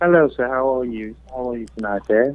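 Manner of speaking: low, soft, put-on English accent. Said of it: "I do have a little bit of an English accent going on".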